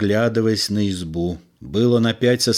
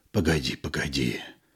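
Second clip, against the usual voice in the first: husky, hoarse, sunken, very low voice; 8 semitones lower, 8 dB quieter than usual. Yegor, head down on the steering wheel, answers frightened Lyuba in a hoarse, sunken voice. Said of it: "Осевшим голосом сказал Егор".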